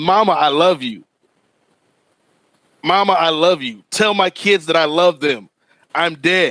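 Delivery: ordinary delivery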